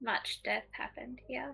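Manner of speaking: gentle character voice. Game master voicing Eska as she comes up, very soft voice. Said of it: "she's just gonna say in a very soft voice".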